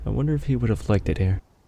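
musing, mumbled aside under breath. Voicing a character who is leaving the camp: mumbling to himself. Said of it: "he just kinda mumbles to himself".

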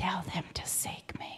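hushed, very quiet, barely voiced whisper. Retelling a prayer, then the Lord's reply: imitating a whisper. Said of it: "he whispers really quietly to me".

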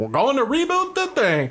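very high, sing-song, swooping taunting parody voice. Retelling how another person echoed the speaker's words in a mocking imitation. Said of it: "He was just mocking".

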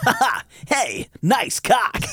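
animated hedgehog voice. Quoting a funny TikTok clip, in a Sonic impression. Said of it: "like a Sonic impression".

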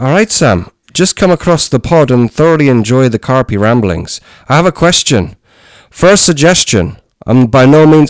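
high, put-on Irish accent. Reading listener Phil's question out on the pod, Phil's part in the accent. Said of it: "should I do it in the accent?".

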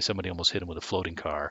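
ordinary delivery

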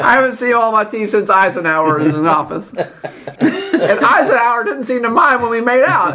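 put-on very high, cranky, unenthused, rambling old-lady voice. Game master voicing the donut shop owner: unenthused old donut lady voice. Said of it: "At the counter is [name] herself, who seems incredibly unenthused and thin for a lady who sells tasty donuts. First, we should say hi and be nice to [name] because she's a sweet old lady that sells donuts".

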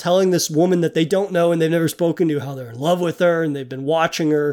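ordinary delivery

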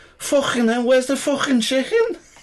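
put-on very high-pitched Liverpool Scouse accent. Retelling what a man suddenly said out of the blue, scouse accent. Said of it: "this Scouse guy going".

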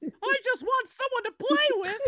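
very high, squeaky cartoon mouse voice. Joking about Jason Voorhees chasing someone, voicing him like Mickey Mouse. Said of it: "sounds like Mickey Mouse out of nowhere".

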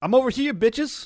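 very high, shrill yell, calling out. Calling out to enemies after teleporting away: yelling out. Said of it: "You're yelling out?".

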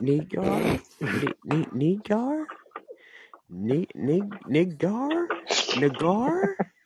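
quiet, very slow, stumbling, halting sounding-out. Imitating someone trying a name while others talk: imitating Sue saying it quietly. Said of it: "she was trying to say it quiet".

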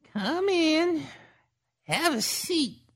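put-on very high-pitched, cracking old woman's crone voice. An old woman at a table beckons Victoria in, cracking old woman's voice. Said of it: "The old woman's voice cracked in a way that suggested she didn't use it often".

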